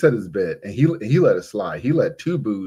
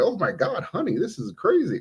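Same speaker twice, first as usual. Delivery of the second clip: mock giggling through the words, very high pitch; 10 semitones higher, 4 dB quieter than usual. Retelling how a husband reacted to his wife: imitating someone laughing while talking. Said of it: "He's just laughing like".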